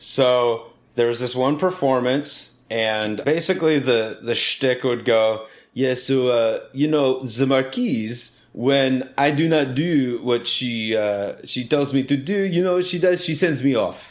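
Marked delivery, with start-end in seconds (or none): 5.7-14.1 bad, terrible put-on fake French accent. Recounting a performance shtick, speaking in a terrible French accent. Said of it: "it's a terrible French accent".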